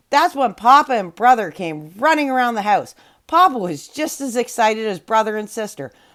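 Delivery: ordinary delivery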